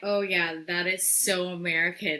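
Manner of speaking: ordinary talk, nothing marked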